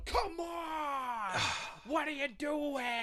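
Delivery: shouted mock comic actor voice. Doing an Adam Sandler impression: yelling Adam Sandler impression. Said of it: "Adam Sandler impression, I would just yell like that".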